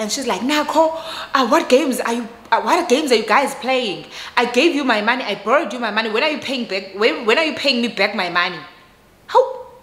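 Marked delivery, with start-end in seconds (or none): 0.4-8.6 angry, demanding man's voice. Retelling a call from her husband: imitating an angry husband. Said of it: "the husband is angry".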